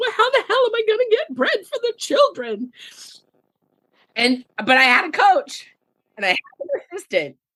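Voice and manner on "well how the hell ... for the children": put-on crying, fake sobbing, very high pitched. Speaker acts out their past self during six hard months, retelling own sobbing. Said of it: "sobbing, going".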